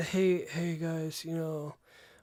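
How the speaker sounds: level, low-key, uninflected, chill monotone. Showing how a future video greeting could sound: monotone.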